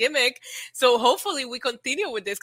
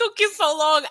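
yelling, pitched up; 5 semitones higher than usual. Retelling how a wrestler yelled at a late teammate: imitating someone yelling. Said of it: "I love the way he yelled at him".

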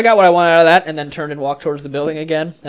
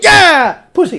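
gleeful, high, joyful burst of a yell; 12 semitones higher, 6 dB louder than usual. Retelling a kindergarten celebration: imitating own joyful shout. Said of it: "out of joy I just go".

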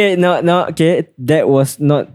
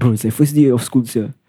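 ordinary delivery

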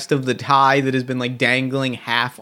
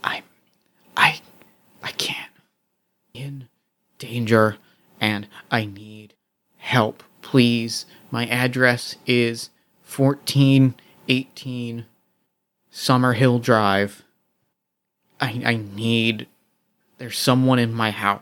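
hushed, whispered voice. Calling 911 about someone in the house, whispering. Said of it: "I start like whispering like".

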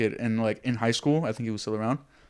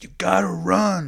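rough, high-pitched scream; 8 semitones higher, 4 dB louder than usual. Retelling what the coach screamed in their ear while they held the ball; retelling coach's screaming. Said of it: "he's like screaming it in my ear".

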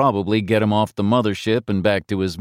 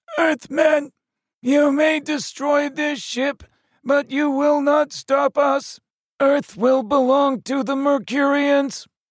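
very high, croaking metallic voice. Reading aloud, a Mercurian voice addresses the Earthmen through a helmet: croaking metallic voice. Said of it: "replaced with a croaking metallic voice".

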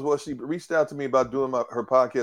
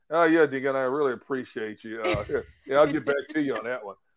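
dripping with heavy sarcasm, laid on thick. Imitating her reply after calling it sarcastic: imitating a sarcastic reply. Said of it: "she said this sarcastically".

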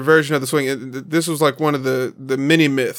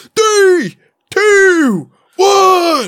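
very high, shrill, swooping, hyper-annoying voice; 7 dB louder than usual. Describing an army doctor manning a high-speed camera, imitating his annoying countdown. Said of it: "he was hyper annoying".

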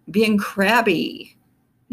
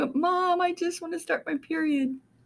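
mock, tearful, very high, soft crying voice; 11 semitones higher, 5 dB quieter than usual. Retelling a talk with her mom, imitating her past self crying. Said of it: "And I start crying".

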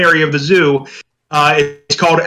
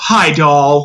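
put-on very sweet voice. Retelling how a man's mother greeted him on TV, put-on very sweet voice. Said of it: "in this very sweet effect voice".

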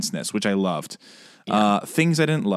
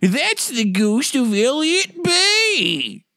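put-on very high, very slow, old-timey prospector voice; 3 dB louder than usual. Speaker's recurring bit whenever a ghost comes up: old-timey miner voice. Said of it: "minor voice and say".

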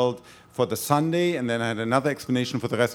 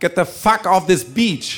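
furious, high, loud, angry shrieking yell; 7 semitones higher, 7 dB louder than usual. Retelling an angry camper on a beach yelling at the speaker, imitating an angry shriek. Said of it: "it was shrieking and yelling".

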